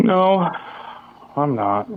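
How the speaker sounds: near tears. Denying a teasing question, sounding about to cry. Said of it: "Why do you sound like you're about to cry?".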